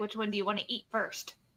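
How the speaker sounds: whispering. Voicing a character who whispers to a pet bunny: whispering to a bunny. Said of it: "She's gonna whisper to the bunny".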